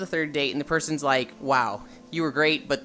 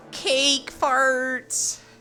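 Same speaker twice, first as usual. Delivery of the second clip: very high-pitched, nasal voice; 11 semitones higher, 3 dB louder than usual. Describing a video, repeating what a voice in it says, nasally voice. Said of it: "you hear this nasally voice go".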